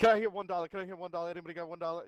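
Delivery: loud, rapid-fire, rattled-off auctioneer call. Showing what some Mexican announcers sound like, imitating a rodeo auctioneer. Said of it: "they're trying to sell something at a rodeo".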